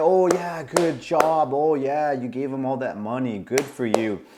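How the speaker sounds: put-on snide, mocking sarcastic taunting praise. Retelling how an angry woman mocked the speaker's friend for giving money, retelling mocking sarcasm. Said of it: "she starts mocking my friend".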